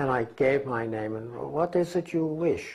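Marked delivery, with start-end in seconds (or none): 1.3-2.8 put-on German accent, pitched up. Retelling a voice at the door, imitating a german accent. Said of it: "he would always use his German accent".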